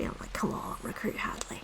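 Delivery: soft, desperate whisper.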